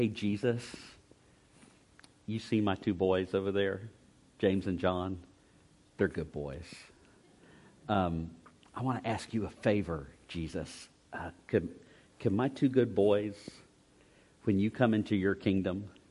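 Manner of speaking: soft, hushed, confidential stage whisper. Retelling a mother asking Jesus a favor for her sons: imitating a half-whisper. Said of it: "she whispers in his ear and says something like".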